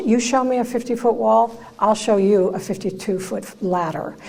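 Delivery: ordinary talk, nothing marked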